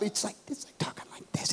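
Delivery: soft, not very loud. A preacher shows how talking through a borrowed mic that wasn't turned up sounded: not very loud. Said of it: "It's not very loud".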